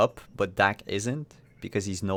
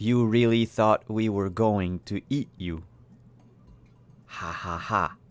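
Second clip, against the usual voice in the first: gentle, mechanical female voice. Voicing a small device that speaks for the Ewoks: robotic soft female voice. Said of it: "robotic, soft, um, female voice".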